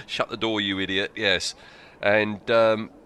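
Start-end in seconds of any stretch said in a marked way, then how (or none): none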